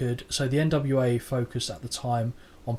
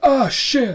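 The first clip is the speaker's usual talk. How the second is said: very high, loud, blurted outburst; 12 semitones higher, 9 dB louder than usual. Describing a wrestling match moment, imitating Austin getting hit: Stone Cold Steve Austin impression. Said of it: "Is that an impression?".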